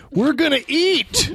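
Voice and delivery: put-on monster voice pushed very high. Announcing to the others that they are about to eat: put-on monster voice. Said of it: "Sounds like a monster".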